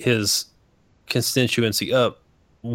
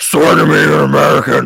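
very loud, rough, barked-out voice; 4 semitones higher, 9 dB louder than usual. Imagining a vetting process run by a guy dressed like Batman, Batman voice. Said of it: "a guy fucking dressed like Batman".

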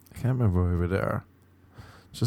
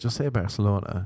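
ordinary delivery

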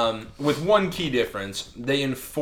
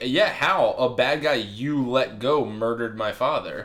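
ordinary delivery

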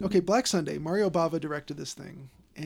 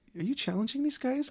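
mock plaintive voice, higher; 8 semitones higher than usual. Imitating a TV renovation-show guy questioning workers on the job site: imitating a plaintive questioning voice. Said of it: "it almost sounded like".

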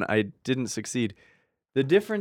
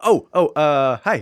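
play-acted, very drawn-out, slow, raised, startled surprised voice; 6 dB louder than usual. Speaker imitates how a woman answered every call, imitating her surprised voice. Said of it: "she always sounded so surprised".

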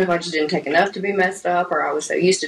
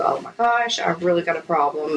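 plain

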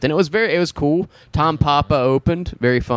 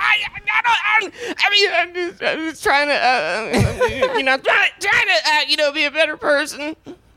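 very high, stammering character voice stumbling over every word. The speaker shows a character a man does, with a stammering impression of him. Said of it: "pretty good impression of him".

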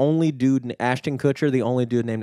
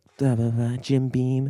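mock trying-to-be-hot commercial voice, slower. Speaker mocks how women talk in commercials when trying to sound hot: imitating women trying to sound hot. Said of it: "the way women talk when they're trying to be hot".

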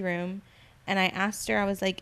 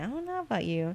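mock-suspicious tone, much quieter; 4 dB quieter than usual. Retelling what a woman said while eyeing the speaker: mock-suspicious quote. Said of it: "looking at me like real suspicious".

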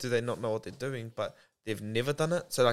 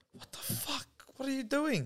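put-on soft, very high, tearful crying panic; 13 semitones higher, 5 dB quieter than usual. Retelling mum walking in on her child with a wooden spoon, imitating her freaking out crying. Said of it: "freaking out, crying like".

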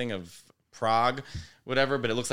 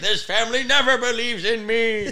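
very high, raised, put-on villainous voice; 12 semitones higher, 8 dB louder than usual. Retelling what Uncle Mike said at the kitchen table, in a villain-like voice. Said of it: "Sounds like a villain".

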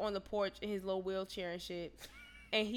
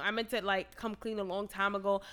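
ordinary talk

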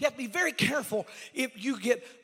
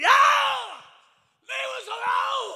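very high, very loud, very slow, drawn-out shriek; 9 dB louder than usual. Retelling a scripture scene where a possessed man cries out: acting out a scream. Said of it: "and a man screams out".

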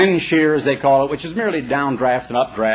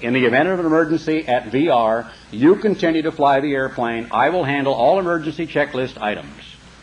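ordinary talk

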